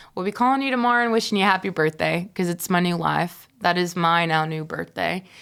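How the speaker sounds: ordinary talk, nothing marked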